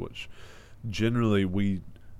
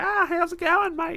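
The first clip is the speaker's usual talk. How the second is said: very high, squeaky put-on Australian accent; 4 dB louder than usual. Describing how Australians talk compared with New Zealanders, in a high squeaky Australian accent. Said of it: "a very higher kind of a squeaky".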